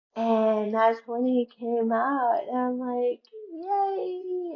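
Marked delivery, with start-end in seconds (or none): 3.6-4.6 put-on very high, long, stretched-out excited "yay". Retelling watching the new pope come out: retelling own excited shout. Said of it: "And I was shouting".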